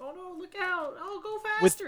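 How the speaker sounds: piercing, very high, very loud, shrill cries. Mocking an actress's dubbed lines in a movie chase, imitating an actress's raised-pitch voice. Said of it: "raise the pitch of her voice".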